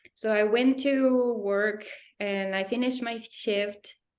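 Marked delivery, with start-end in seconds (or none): none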